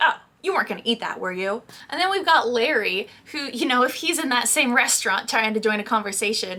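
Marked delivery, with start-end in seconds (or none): 0.0-1.6 playful, cheeky joking voice. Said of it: "she's probably gonna be very funny about it".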